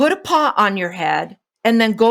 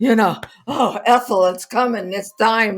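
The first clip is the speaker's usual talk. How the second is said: put-on elderly man voice. A speaker asks for ten seconds, then does the old man thing. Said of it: "Do the old man thing".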